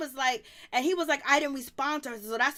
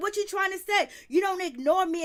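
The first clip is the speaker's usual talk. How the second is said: acted-out yelling; 5 semitones higher than usual. Recounting a woman shouting at two others, acting out a woman's yelling. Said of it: "she's just yelling".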